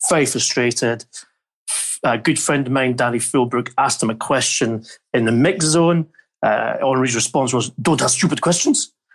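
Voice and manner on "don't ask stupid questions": put-on French-accented delivery. Retelling a player's reply to a reporter's question: Thierry Henry impression. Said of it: "That's my best impersonation".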